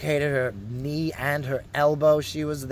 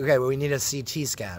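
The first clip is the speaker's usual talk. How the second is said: ordinary delivery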